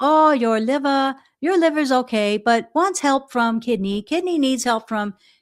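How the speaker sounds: put-on heavily broken English accent. Describing a healer who read pulses, quoting his diagnosis: very broken accent. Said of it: "very broken accent".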